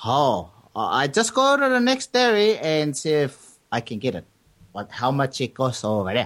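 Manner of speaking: put-on Chinese accent with sing-song, swooping tune. Telling a joke, as the customer heading to the next dairy, put-on Chinese accent. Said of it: "That was the Chinese guy".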